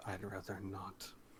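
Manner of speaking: muttered under breath. Retelling a man's reply to a request, muttered under his breath. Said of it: "under his breath".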